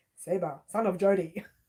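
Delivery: ordinary delivery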